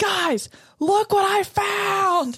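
mock very high, very slow, stretched shout. Retelling walking in late to meet the crew, retelling a yell. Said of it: "I'm like yelling".

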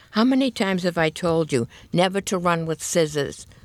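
plain reading voice

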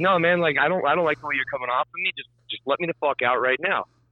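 fed-up, super irritated tone. Retelling demanding to be let out of a ride, super irritated. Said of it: "super, super irritated with him".

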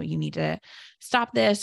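put-on stern tone. Recounting how they talked to him while trying to redirect him, retelling talking sternly. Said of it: "talking sternly to him".

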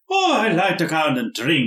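put-on stage-Irish accent. Speaker gives an example of a stereotyped character, stereotypical Irish accent. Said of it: "that's Irish".

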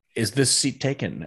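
normal talking voice

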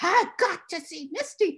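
mock high, slow, drawn-out holler. Retelling a man who got backstage at intermission: imitating a man yelling. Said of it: "he's yelling my name".

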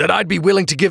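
plain reading voice

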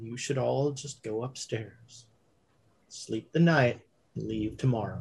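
very quiet, soft, low and utterly calm. Game master voices a man addressing the group, very quiet and calm. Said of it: "he's speaking very quietly and very calmly".

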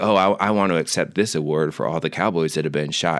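ordinary talk

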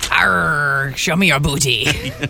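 very low pirate voice, long drawn-out "arr". Marking National Talk Like a Pirate Day, in a pirate voice. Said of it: "Today's National Talk Like a Pirate Day".

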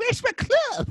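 very high, slow imitated monster voice. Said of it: "It's so good".

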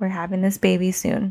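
ordinary delivery

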